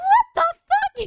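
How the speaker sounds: very high, shrill, very loud shrieking yell. Retelling how their mom came charging in, retelling mom's yell. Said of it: "she yells".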